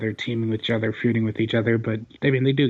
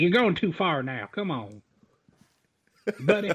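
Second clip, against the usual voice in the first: put-on Southern accent, higher pitch; 7 semitones higher than usual. Retelling how Jamie Noble reprimanded Seth: imitating Jamie Noble's accent. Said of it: "reprimand Seth was just funny in that fucking accent".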